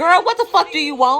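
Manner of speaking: play-acted fed-up, angry, high voice. Retelling confronting a stranger who kept asking: imitating her own angry demand. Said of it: "Just like that".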